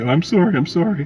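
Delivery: high-pitched, mock groveling, apologetic tone.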